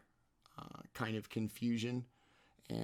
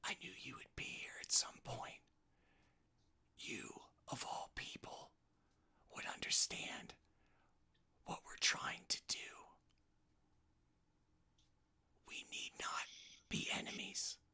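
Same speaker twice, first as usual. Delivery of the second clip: hushed, very quiet, barely voiced whisper; 10 dB quieter than usual. A voice you hear addresses you amid the illusions, in a whisper. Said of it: "like in a in a whisper".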